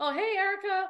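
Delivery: very high, loud yelling. Retelling a hallway tour after a friend's text: retelling a yell. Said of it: "I yell out".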